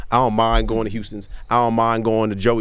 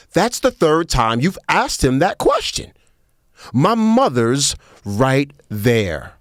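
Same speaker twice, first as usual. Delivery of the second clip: pointed, barbed, raised sing-song tone; 4 semitones higher than usual. Retelling the daughter's remark to a waitress: imitating a remark meant to be overheard. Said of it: "she said it so the woman can hear it".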